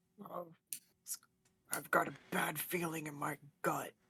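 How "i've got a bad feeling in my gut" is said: in-character, half-whispered aside. Playing a character who warns Nadrin quietly: half-whispering in character. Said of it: "she whispers to Nadrin".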